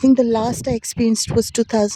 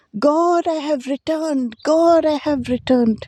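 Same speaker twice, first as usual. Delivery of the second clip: man's called-out cry, pitched high; 5 semitones higher than usual. Retelling what a man on a stretcher cried out to god, retelling a man's yell.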